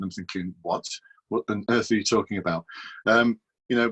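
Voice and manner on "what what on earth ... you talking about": ordinary delivery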